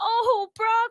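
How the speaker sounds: very high, over-eager, gushing. Retelling an on-air moment, the speaker quotes how the listener came in: retelling an overly enthusiastic line. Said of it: "I said it a little bit too enthusiastic".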